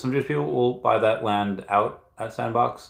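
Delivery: ordinary talk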